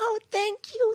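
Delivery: put-on very high-pitched, babyish little-kid voice. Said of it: "'cause she would talk like a child".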